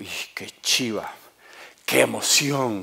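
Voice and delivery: mock thrilled, slow, excited outcry of delight. Retelling a tightrope walker's words on reaching Canada: imitating an excited man. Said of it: "estaba muy emocionado".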